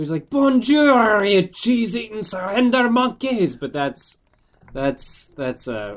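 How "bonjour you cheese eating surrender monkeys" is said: very high-pitched put-on Scottish accent. Trying out a character voice modeled on Groundskeeper Willie. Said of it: "that's Scottish".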